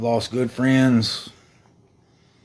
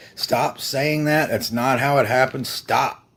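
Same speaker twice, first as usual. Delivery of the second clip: normal talking voice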